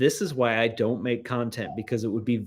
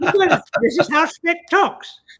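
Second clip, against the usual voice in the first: put-on leprechaun-like voice, higher and louder; 8 dB louder than usual. Playing a made-up character named Spec for a joke: leprechaun-like Spec voice. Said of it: "he sounds a bit like a leprechaun".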